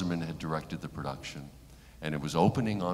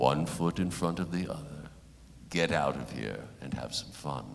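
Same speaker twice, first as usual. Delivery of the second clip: put-on resounding elderly British voice; 3 dB quieter than usual. Retelling what John Houseman said to him backstage, in a booming John Houseman voice. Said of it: "John Houseman's booming voice".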